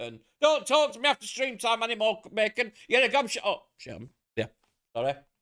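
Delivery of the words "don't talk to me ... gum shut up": very loud, high, playful good-natured shouting. Speaker acts out what they shout at a friend during streams: retelling good-natured shouting. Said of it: "me and Flem shout at each other even more".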